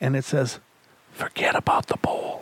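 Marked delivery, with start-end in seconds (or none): 1.1-2.4 put-on whispering voice. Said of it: "a whispering voice comes through".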